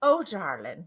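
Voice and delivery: very low, soft, deep English accent. Describing an aunt, the speaker tries out her accent; deep english accent. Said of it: "deep English accent".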